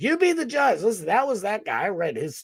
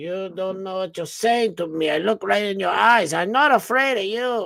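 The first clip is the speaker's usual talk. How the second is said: put-on movie gangster accent, like a screen mob boss. Acting out what another man said, unexpectedly slipping into a Scarface voice. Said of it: "I don't know why I sound like Scarface".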